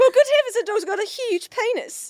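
loud, put-on Australian accent. Podcast co-hosts joking about accents, one trying a put-on australian accent. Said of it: "It's Australian".

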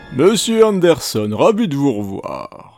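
put-on sci-fi villain voice. A host greets Mr. Anderson, doing an Agent Smith impression. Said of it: "j'imite aussi l'agent Smith le week-end".

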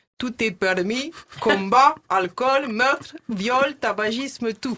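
loud, clumsy, bad Russian accent. Announcing the show's rules in a bad Russian accent. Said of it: "l'accent russe arrive".

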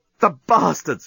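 with a groan. Narrating the journalist responding to Scraliontis, groaned. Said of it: "groaned the journalist".

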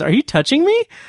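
mock laughing delivery. Recounting a film scene where a performer, pulled onto a bed, asks this, retelling a line said laughing. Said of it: "with a laugh".

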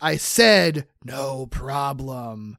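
very slow, menacing monster hiss. Recapping a scene where Harry turns on Peter; hissing Harry monster voice. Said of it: "turns menacingly to him and hisses".

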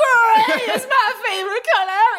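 very high, drawn-out, stretched shriek. Recounting a man at a bar screaming at patrons: retelling a scream. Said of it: "he's just screaming at patrons".

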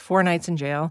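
plain, matter-of-fact, bare delivery with no feeling. Comparing two ways of saying a phrase, first said fast. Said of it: "I can say it fast".

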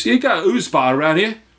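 put-on Cockney accent. Retelling a guy asking at the front desk for directions: thick Cockney accent. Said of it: "the thickest Cockney accent".

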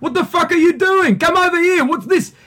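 Greek-Australian accent. Explaining the stereotypical voice of italian and greek migrants, stereotypical migrant australian accent. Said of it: "the sort of stereotypical voice is going".

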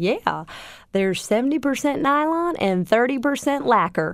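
put-on Southern accent. Retelling a phone call about finalizing a patent: imitating Ted, thick Southern accent. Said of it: "the most thick Southern accent you've ever heard".

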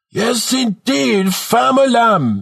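very high, bellowed, exaggerated put-on Jamaican accent. Narrator reading a 15-year-old's shout from a cart's front seat, bellowing in exaggerated Jamaican accent. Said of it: "he bellows in an exaggerated Jamaican accent".

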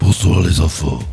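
very deep demonic voice. Among friends, asked to do the voice again, greeting the kids: very deep demonic voice. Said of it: "tu fais super Attends. grave!".

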